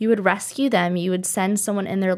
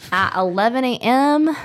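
country accent slipping in, raised voice; 3 semitones higher, 5 dB louder than usual. Inviting local listeners to come on sunday, in a country accent. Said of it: "I sounded so country when I said".

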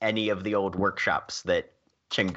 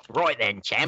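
put-on Cockney accent sliding into Australian. Speaking in character to the group: attempted Cockney accent sounding Australian. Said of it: "Jack's attempt at a Cockney accent goes straight to Australian".

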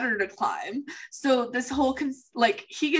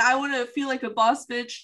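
ordinary talk, nothing marked

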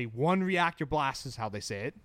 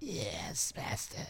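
soft, breathy whispered voice; 5 semitones lower, 8 dB quieter than usual. Speaker recalls watching the movie and quotes it in the Emperor's voice. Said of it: "I love doing the Emperor's voice".

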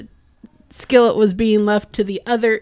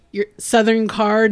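usual speaking voice

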